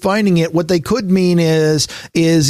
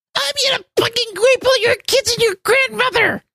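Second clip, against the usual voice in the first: put-on very high voice of a ten-year-old child. Describing a Halo or Call of Duty lobby, mimicking a ten-year-old kid voice. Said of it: "the voice of a 10-year-old going".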